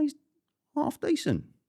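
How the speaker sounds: voice jumping to a very high pitch. Speaker gives a verdict on a fighter, high-pitched voice. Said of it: "You went really high pitched there".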